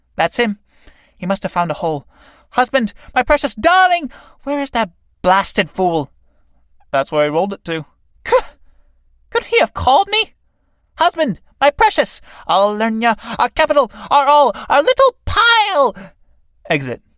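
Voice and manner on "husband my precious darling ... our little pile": high character voice with big pitch swoops. Reading a play aloud, voicing the beetle wife calling for her husband: Mrs. Beetle character voice. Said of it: "[name], / Do you mean that old Aridin, that greasy fat bundle of rags? That's her. Where's my pile? That old tub in petticoats? / Wife".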